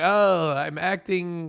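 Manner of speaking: fake Turkish accent that drifts into Russian. Imitating a man who says he is acting: fake Turkish accent, sounding Russian. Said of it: "I don't know why he's Russian, but that's the closest I can do to Turkish accent".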